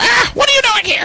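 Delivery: very high, high-pitched yelling goblin voice. Voicing a goblin that comes out of a cave: goblin yelling. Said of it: "the goblin yells".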